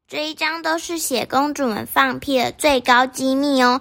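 plain reading voice

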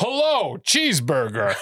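exaggerated, high, sing-song American accent. Speaker retells what he'd say while visiting ireland: over-the-top american accent. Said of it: "I would do a over eccentric American accent".

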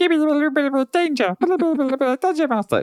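very high fairy-creature voice. Describing the sprite to the others: imitating the sprite's voice. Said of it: "type voice".

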